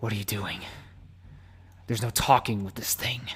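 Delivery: hushed, very quiet whisper, right up close. After killing a werewolf, a character speaks into Van Renfield's ear, whispering. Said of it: "he whispers in your ear".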